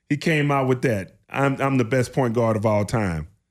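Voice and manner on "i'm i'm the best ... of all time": usual speaking voice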